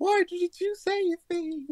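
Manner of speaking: high, put-on ghost voice. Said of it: "the ghost comes to say".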